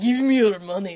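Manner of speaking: put-on Venezuelan-accented speech. Acting out a big hairy man from Venezuela jumping out, Venezuelan accent. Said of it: "was that a good accent for Venezuela?".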